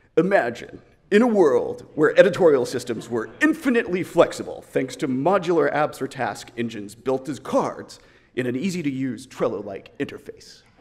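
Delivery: very loud, booming, epic movie-trailer announcer voice. Presenter pitching a flexible editorial system, in a movie trailer narrator voice. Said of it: "the voice from the movie previews".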